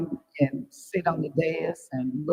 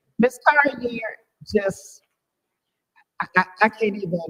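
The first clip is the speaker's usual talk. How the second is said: choked-up, faltering, halting words; 5 semitones higher, 3 dB louder than usual. Thanking someone for gifts left for the board, getting emotional. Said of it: "I'm getting emotional".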